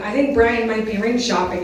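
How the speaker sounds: normal talking voice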